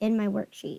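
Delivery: ordinary delivery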